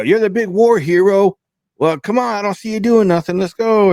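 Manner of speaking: shrill, very high, freaking-out yelling. Recapping a show scene where she freaks out, imitating her yelling. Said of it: "She starts freaking out and you know yelling".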